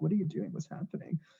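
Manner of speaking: hushed, breathy, worried whisper. Retelling his mom's reaction to him making videos, imitating a scared, worried mom. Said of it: "She was scared for me".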